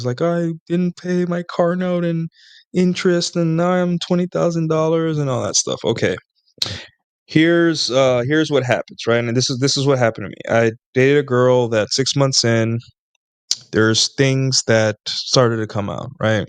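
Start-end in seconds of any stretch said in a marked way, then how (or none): 0.2-5.8 high, tearful, sobbing crying voice. Acting out a girlfriend confessing her debt: imitating someone crying.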